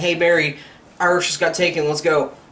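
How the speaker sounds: ordinary delivery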